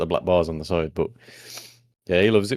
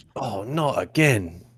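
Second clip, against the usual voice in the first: fake surprised tone, higher; 4 semitones higher than usual. Retelling how they pretend not to expect Team Rocket: imitating own feigned surprise. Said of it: "I'll pretend that I ain't expecting them".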